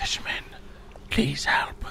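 barely audible, faint rasping whisper. Narrating a game scene, voicing a hooded figure asking a fisherman for help: faint rasping voice. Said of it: "You can barely hear the rasping voice".

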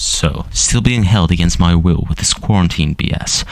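put-on cool voice. Speaker restarts a story after announcing a switch to a cool voice. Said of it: "let me put on my cool voice".

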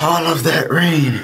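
winded, breathless, puffing between words. Just back from running through heavy rain, talking to viewers: out of breath. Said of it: "I'm out of breath".

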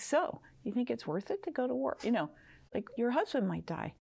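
play-acted snide, snarky, pointed, needling tone. Retelling own question to families at a troop send-off: imitating own snarky question. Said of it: "very snarky".

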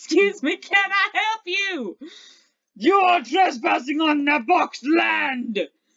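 very loud, huge, hulking orc character voice. Voicing an orc who stands in front of the bull, in a hulking orc voice. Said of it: "onto the trail comes a huge, hulking orc!".

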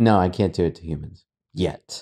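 ominous, unjoking delivery. Retelling how a man answered a question, in a retold ominous, unjoking tone. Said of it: "not like in a funny kind of ha ha way".

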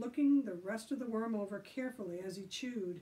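ordinary delivery

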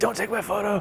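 put-on shrill yell, pitched high. Recalling yelling at some kid for taking a photo: retelling a yell. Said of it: "yelling at some kid".

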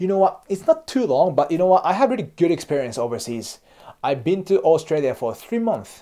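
confident, self-assured tone.

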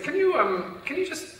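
high-pitched, hesitant voice.

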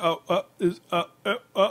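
high, slow, stuck, speechless dumbfounded stammer. Retelling how a man reacted when he didn't know what to say: imitating a dumbfounded stammer.

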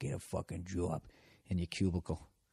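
soft mutter under the breath, to oneself. Picturing audience members in their cubicles, imitating muttering to oneself. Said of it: "just muttering to yourself".

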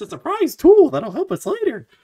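squeaked, high and bouncy. Explaining what the quote was, in a Mickey Mouse voice. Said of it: "I didn't know I could do a Mickey voice".

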